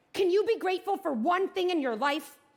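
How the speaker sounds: angry yelling.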